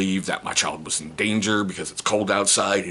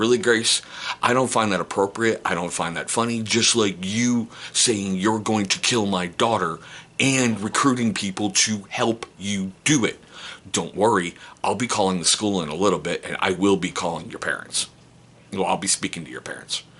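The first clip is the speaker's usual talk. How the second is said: mock sharp, cross, angry snapping tone. Retelling scolding a child at the bus stop: imitating snapping angrily. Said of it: "Chris snapped a little and went".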